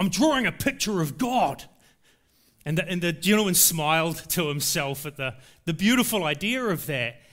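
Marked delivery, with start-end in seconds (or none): 0.0-1.6 put-on resolute, unwavering, firm, determined voice. Retelling a little boy's answer to an elderly gentleman, imitating a determined tone. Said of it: "with a really determined tone in his voice".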